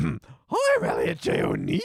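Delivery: rough, creaky, made-up put-on character voice. Doing an impression of Elliot after failing to plan it: Elliot impression. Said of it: "image impression".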